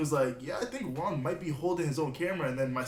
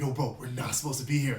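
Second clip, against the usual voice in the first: put-on panicked voice, lower; 3 semitones lower than usual. Retelling how a cameraman reacted in the moment: imitating Laser freaking out. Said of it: "he's freaking out".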